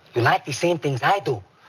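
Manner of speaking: put-on slight Mexican accent. Showing the accent mixed into a chihuahua cartoon voice: slight Mexican accent. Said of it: "a touch of, south of the border".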